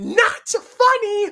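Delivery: mock, very high, very loud shrieked yelling. Acting out an imagined scene where she yells back at Peter: yelling. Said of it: "she just hear her yelling".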